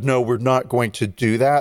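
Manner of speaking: ordinary talk, nothing marked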